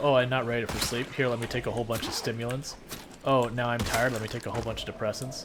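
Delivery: ordinary delivery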